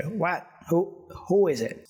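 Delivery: high, crotchety, crabby voice. Narrating a game scene, a voice behind the door answers a knock in a crotchety voice. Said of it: "You hear sort of like a crouchety voice say".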